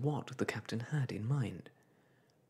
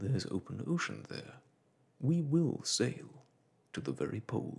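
usual speaking voice

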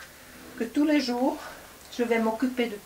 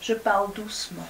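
ordinary talk, nothing marked

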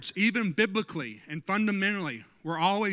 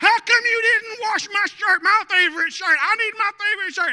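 very high, very loud, shrill screaming; 13 semitones higher, 8 dB louder than usual. Acting out a complaint to a spouse about an unwashed shirt: acting out yelling. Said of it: "And I'm yelling, I'm screaming".

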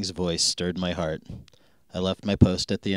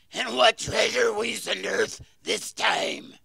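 very high, rasping, rough, raspy voice. In a story, a hooded figure interrupts the narrator's father: raspy voice. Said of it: "a raspy voice interrupted me".

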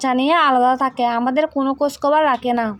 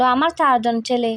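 ordinary delivery

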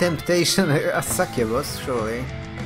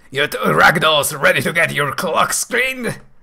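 silly male voice, louder; 2 semitones higher, 7 dB louder than usual. Storyteller voicing a female character addressing two newcomers, silly male voice. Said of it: "I'm giving her a silly male voice".

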